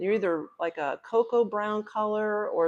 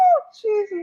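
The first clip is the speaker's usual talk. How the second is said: play-acted shrill, loud, very high, held-back giggle; 8 dB louder than usual. Retelling a reaction at a checkout, retelling stifled giggling. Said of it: "I'm trying not to bust out laughing".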